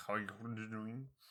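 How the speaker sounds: mock gulped speech through a mouthful, mid-swallow. Retelling a greeting said while swallowing a drink: imitating talking while swallowing. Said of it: "swallowing my drink at the same time of saying that".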